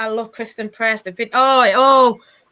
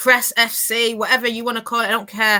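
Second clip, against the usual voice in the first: ordinary delivery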